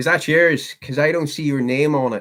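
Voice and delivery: put-on Northern Irish accent. Practicing accents, the speaker tries out a line in a Northern Irish accent. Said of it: "Working on my Northern Irish".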